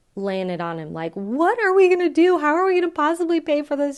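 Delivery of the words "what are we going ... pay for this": mock freaking out, very high, panicked pleading tone. Retelling own past words about how to pay: imitating own past panic. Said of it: "totally freaking out".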